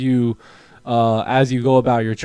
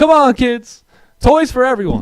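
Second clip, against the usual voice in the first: mock very high, gleeful, excited cheering; 11 semitones higher, 5 dB louder than usual. Acting out what happens after closing the stream: pretend screaming with excitement. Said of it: "I start screaming".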